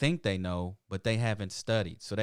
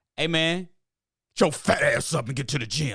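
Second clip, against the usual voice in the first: loud, harsh, mean drill-sergeant voice; 6 semitones higher, 6 dB louder than usual. Voicing one's own inner voice about going to the gym, in a put-on mean voice. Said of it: "I'm that mean voice".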